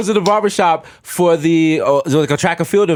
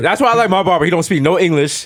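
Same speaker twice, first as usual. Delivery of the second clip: ordinary talk, nothing marked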